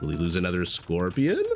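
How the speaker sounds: questioning upward lilt. Repeating the call to show the change: rising question lilt. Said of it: "the lilt or whatever it is of my voice".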